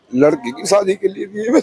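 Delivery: high, tearful, sobbing, crying voice.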